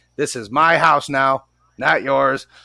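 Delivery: put-on slow, firm, stern voice. Retelling speaking to the ghost in the house: retelling own stern voice. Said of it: "talk to the ghost in a stern voice".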